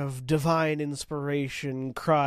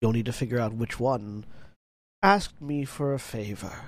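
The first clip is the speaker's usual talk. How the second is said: archaic, cryptic put-on character voice, lower pitch; 3 semitones lower than usual. Voicing the statue as it gives a riddle: archaic, cryptic delivery as Elian Arathis. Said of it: "Archaically and cryptically".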